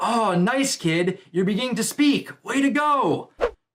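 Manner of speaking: upbeat, high-pitched cheering tone. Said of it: "you see Banjo like".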